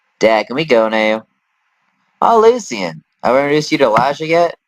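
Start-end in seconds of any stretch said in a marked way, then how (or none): 0.2-1.3 put-on Southern accent with a drawl. Voicing a character's son, doing the Southern accent: put-on Southern accent. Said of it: "I have to do the southern accent".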